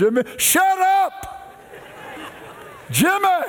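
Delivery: play-acted very high, slow, drawn-out startling outburst. Recalling his grandmother's voice interrupting his prayer, retelling a startling outburst. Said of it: "boy, it startled me".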